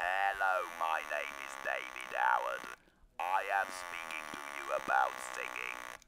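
artificial, mechanical robotic electrolarynx voice. Speaker demonstrates talking through a device held to his throat: robotic electrolarynx voice. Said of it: "So you get that kind of robotic voice".

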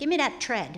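put-on hard Chicago accent, thread said as tread. Imitating how a woman who couldn't pronounce certain words talked, hard Dead End Kids accent. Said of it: "very hard, kind of like a dead end kids kind of accent".

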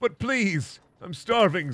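pitiful, desperate pleading tone. Acting out a begging YouTuber in a mock skit: acting desperate, pleading. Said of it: "says the desperate YouTuber".

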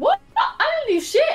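very high-pitched voice. Blamed on stream for being broke, denying it: voice going very high. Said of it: "Your voice went so high".

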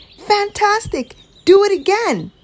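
very high, shrill, loud shout. A princess speaks to a tired dragon just back from flying around the world, shouting. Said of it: "Elizabeth shouted".

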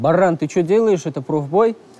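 plain

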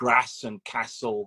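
hard short northern a in grass and castle. Describing a birmingham writing partner's hard ah: northern short a in grass, castle. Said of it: "he does the kind of hard ah, like my mum from the north does".

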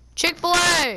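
loud, high-pitched, excited shout.

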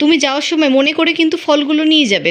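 plain reading voice

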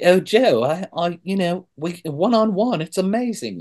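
put-on British accent. Retelling what a British woman told him on a call, British accent. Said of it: "so I have to use my accent".

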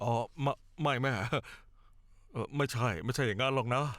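faltering, halting speech, tripping over words. A son answers his mother's question, stammering. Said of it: "แกพูดตะกุกตะกัก".

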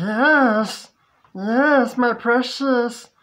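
very slow, loud, high creature voice, "yes" drawn out. Reacting to a character on screen turning into something: Gollum voice. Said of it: "like, Gollum from Lord of the Rings".

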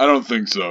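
put-on deep voice. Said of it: "that was fake at first".

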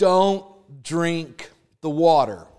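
loud, slow shout, called out. Retelling a warning at a stream: imitating someone shouting. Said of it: "my youth pastor shouts out".

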